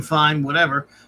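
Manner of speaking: ordinary delivery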